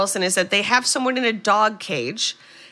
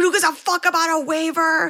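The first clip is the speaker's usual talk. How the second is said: mock all-out screamed outburst, high-pitched; 9 semitones higher than usual. Retelling a movie scene where the mother yells: imitating someone screaming. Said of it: "she's screaming".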